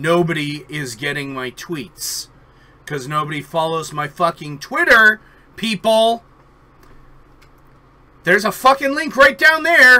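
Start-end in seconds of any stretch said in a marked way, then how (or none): 2.8-10.0 very loud yell, rising in pitch. Calling out to people: yelling. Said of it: "You're getting loud".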